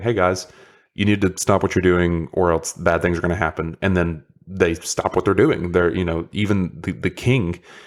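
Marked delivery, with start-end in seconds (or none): none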